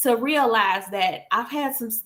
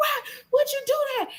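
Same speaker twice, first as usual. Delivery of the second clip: mock tearful shouting, very high-pitched, crying; 14 semitones higher than usual. Retelling being pushed into a pool, yelling at the one who pushed: imitating crying while yelling. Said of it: "I'm crying and I'm yelling at him like".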